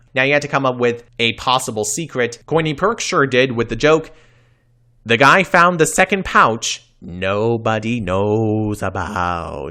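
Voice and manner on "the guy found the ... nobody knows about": eerie, spooky voice. Recounting a joke from a show, delivered in a spooky voice. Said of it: "I'm saying that in the spooky voice".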